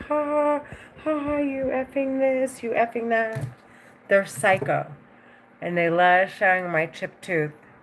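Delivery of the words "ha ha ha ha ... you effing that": high-pitched, taunting, jeering laughter. Retelling how they keep laughing: imitating someone laughing. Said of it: "they're, like, constantly laughing, like".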